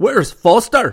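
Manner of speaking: very loud, high, furious, angry bellow. Narrator reading a commander stepping through the lock, bellowing. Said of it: "he bellowed".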